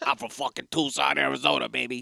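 rough, creaky, raspy mob-boss voice. Joking about an actor as assistant D A of Tucson: James Gandolfini impression.

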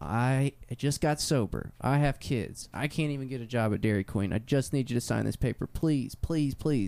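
earnest, begging, imploring pleading voice. Retelling a woman pleading with a judge outside the courthouse, imitating her pleading. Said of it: "pleading with the judge".

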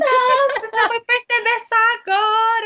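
very high, loud, needling, teasing mockery. Retelling a sister's reply about a TV rerun: imitating sister mocking. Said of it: "Ela super fez bullying em cima de mim".

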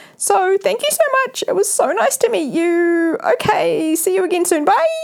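voice shot up very high and squeaky. Retelling a goodbye after a first meeting: imitating own high-pitched voice. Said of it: "My voice went up, like, really high".

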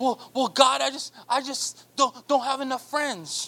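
put-on complaining tone. Acting out a person complaining to god: imitating someone complaining. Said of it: "you complain about everything".

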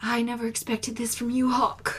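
put-on quick Welsh accent all the way through. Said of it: "in her Welsh accent".

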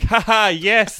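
hollow, forced, fake "ha ha" laugh. Showing the fake laugh a radio host must do: fake laughing. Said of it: "I have to do the fake".

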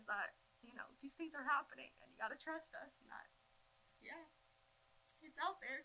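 choked-up, tearful voice. Speaker, talking about hard times, asks listeners to trust them, voice shaking and teary. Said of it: "my voice is shaking and I'm getting a little teary-eyed".

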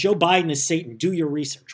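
normal talking voice

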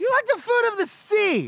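shouting. Teasing the other speaker about loving seafood, yelling. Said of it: "Sorry for yelling".

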